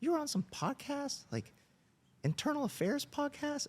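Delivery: tiny, very high-pitched little man's voice. Quoting a man in a retold conversation, imitating a high-pitched voice. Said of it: "he has a little high-pitched voice".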